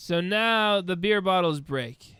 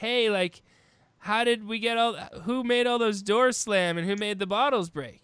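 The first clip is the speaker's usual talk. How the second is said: ordinary delivery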